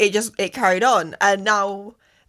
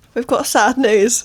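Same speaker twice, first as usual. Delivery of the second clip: slow, put-on mournful, fake somber tone; 3 semitones higher, 4 dB louder than usual. Announcing news on the podcast with a mock sad tone. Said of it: "Don't say it like that".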